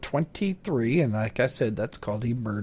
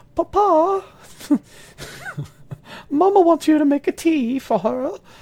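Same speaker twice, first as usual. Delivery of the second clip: put-on very high, cute little-child voice, poor British accent; 13 semitones higher, 6 dB louder than usual. Retelling a child interrupting a recording, in a bad british accent, cute child voice. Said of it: "my British accent sucks".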